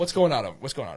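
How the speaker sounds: stern, loud scolding tone. Host play-scolds his co-host about her segment; stern raised voice. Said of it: "I'm gonna raise my voice".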